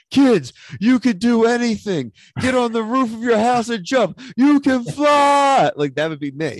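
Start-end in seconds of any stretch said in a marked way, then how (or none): 0.1-5.7 put-on high, loud, hyped-up shouting voice. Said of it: "that Key and Peele skit about Kevin Garnett".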